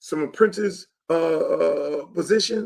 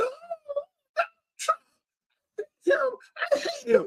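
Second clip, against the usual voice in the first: very high mock screaming, hollering, crying-like wailing rant. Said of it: "screaming and hollering".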